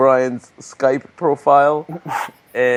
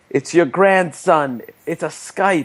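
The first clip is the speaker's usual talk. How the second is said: mock call, sounding like it comes from another room; 4 semitones higher than usual. Retelling a show's scene, voicing the wife calling to her husband offscreen, imitating shouting. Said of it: "you hear his wife shouting from off screen".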